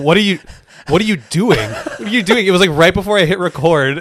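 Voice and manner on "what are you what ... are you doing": dumbfounded, halting delivery, stumbling, said twice over. Retelling the other speaker's stunned reaction, imitating a stunned friend. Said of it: "mouth was agape, and he was like".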